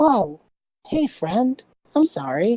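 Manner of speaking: high, charmed, chummy little kobold voice. Game master voicing a charmed kobold greeting a player, in a charmed friendly kobold voice. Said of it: "this kobold looks at you and is just like".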